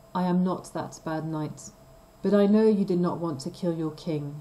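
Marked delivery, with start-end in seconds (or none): none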